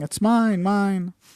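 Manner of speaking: put-on high, yelling little child's voice. Retelling how an elder child yelled from a baby chair: imitating a child yelling. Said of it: "he's yelling".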